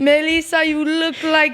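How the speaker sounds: mock mean Greek accent, old woman voice. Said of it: "I can do a Greek accent is if I'm, like, really mean, because that's, like, my grandma".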